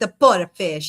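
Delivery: Italian-American New York accent. Saying a fun word in a put-on voice: new york italian accent. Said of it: "I went with the region of New York Italian on that one".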